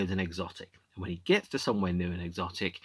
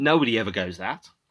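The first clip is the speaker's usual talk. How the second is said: plain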